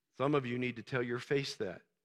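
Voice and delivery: very quiet, very low, hushed playful teasing. Speaker addresses listeners who raised their hands, teasing. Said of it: "I'm teasing you".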